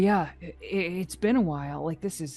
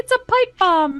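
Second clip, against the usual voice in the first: pitched way up, loud and slow; 14 semitones higher, 8 dB louder than usual. Joking at the table about a found item: Mickey Mouse voice. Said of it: "Why'd you say that like Mickey Mouse?".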